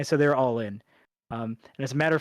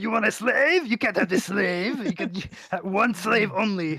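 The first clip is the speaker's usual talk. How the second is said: high, weird, pitched-up alien voice; 6 semitones higher than usual. Talking with others about a weird character they've grown to like, doing a Watto voice. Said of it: "That fucking voice".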